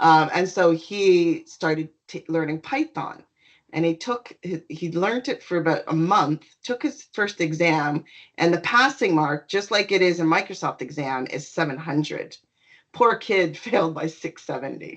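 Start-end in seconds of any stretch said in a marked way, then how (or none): 12.9-15.0 words broken up by laughter while talking. Telling a story about someone's exam result, laughing while talking. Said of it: "sorry, I'm laughing".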